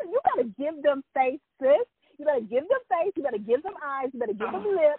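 play-acted sassy cheerleader hype, high-pitched cheering. Retelling cheering on a friend's acting gig: retelling own hype cheering. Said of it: "how I was rooting for my friend".

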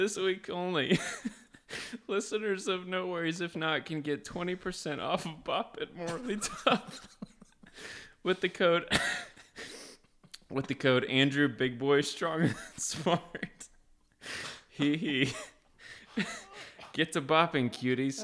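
laughing so hard it sounds like crying. Reading a joke sponsor ad aloud, crying with laughter while talking. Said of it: "I am really crying".

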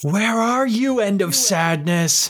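high-pitched yelling.

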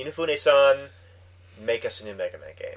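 ordinary talk

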